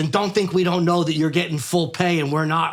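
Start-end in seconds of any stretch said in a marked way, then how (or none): none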